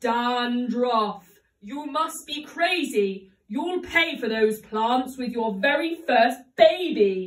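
dreadful, frightening voice. The witch catches Dan stuffing his pockets with the herbs, in a terrible voice. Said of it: "he heard a terrible voice".

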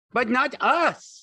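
joyful, very high-pitched happy cry. Lenny answers George, crying out happily. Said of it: "Lenny cried happily".

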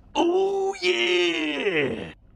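strained, very high, stretched-out yeah. Doing a wrestler's catchphrase with a strained voice: Randy Savage impression. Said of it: "sounds like he's having glorified pooping as he strains his voice".

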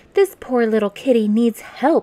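pleading, imploring, begging tone. A girl begs her mother to help a stray kitten: pleading. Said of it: "pleaded Annabelle".

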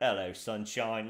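put-on spoken with a Cockney accent. Channeling an inner Jason Statham in the car: Jason Statham Cockney accent. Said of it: "I just channeled my inner Jason Statham".

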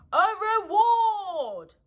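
very loud, high call, "reward" stretched out. Owl, talking with Pooh about Eeyore's lost tail: very loud. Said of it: "said Owl very loudly".

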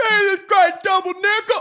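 put-on yelling. Talking about Jevin, the speaker does a Wally Burnham impression, yelling at him. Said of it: "That's my Wally Burnham yelling at Jevin".

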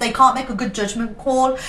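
usual speaking voice

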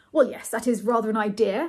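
ordinary delivery

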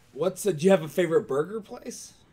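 cracking voice. Chatting after a day of talking and drinking, voice cracking. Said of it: "my voice just cracked like I was a puberty".

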